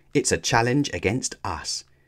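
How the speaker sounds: ordinary delivery, nothing marked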